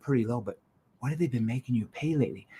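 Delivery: gentle, worried, softly caring tone. Showing how tone changes a repeated line, asking in a softly concerned tone. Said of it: "A concern tone".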